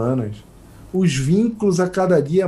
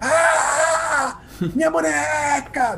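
put-on very high-pitched squealing scream; 10 semitones higher than usual. Recounting how she screamed when a stranger handed her the doll; retelling a scream. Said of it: "ela dá um grito".

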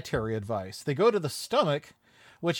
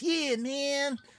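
very high-pitched hippie beatnik voice; 10 semitones higher, 4 dB quieter than usual. Describing a cartoon stomach character, doing his beatnik voice. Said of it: "more like a beatnik voice".

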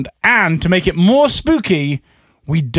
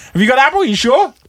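pointed, pitched-up, questioning-sounding tone; 7 semitones higher than usual. Showing another person how a friend asked about the flavor: imitating a friend's question. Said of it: "He went like this".

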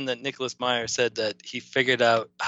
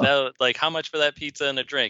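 ordinary talk

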